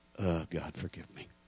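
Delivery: sighing words, acted. Telling a story, speaker acts out saying it after a deep breath, re-enacted sigh. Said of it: "took a deep breath, sighed".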